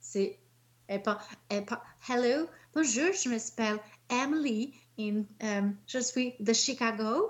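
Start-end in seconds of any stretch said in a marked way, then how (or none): 2.1-7.3 put-on voice like a dubbed character. Mocking the French dub of a series, imitating Emily's French dub voice. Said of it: "elle parle comme ça tout le long".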